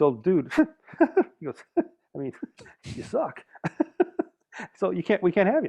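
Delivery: put-on nervous giggling. Retelling a band director cutting someone at auditions: imitating Tom's nervous giggle. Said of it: "he giggles".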